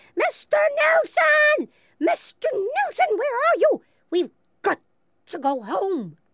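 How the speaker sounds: very high, shrill, slow, drawn-out shrieking. She calls out for Mr. Nilsson, ignoring the napping bull: shrieking at the top of her voice. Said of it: "she was shrieking at the top of her voice".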